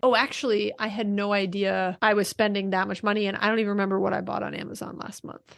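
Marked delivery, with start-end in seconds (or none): none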